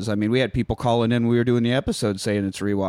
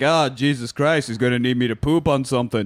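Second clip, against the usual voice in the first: grumpy, elderly put-on voice. Imitating Alan Arkin in a rest home, Alan Arkin impression. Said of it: "That's a great Arkin in person".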